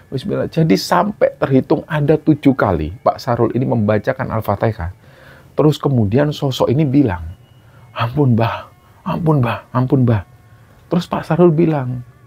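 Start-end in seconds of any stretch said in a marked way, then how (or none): 7.9-10.2 put-on old man voice. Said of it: "kayak suara kakek-kakek".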